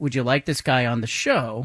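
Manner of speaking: ordinary talk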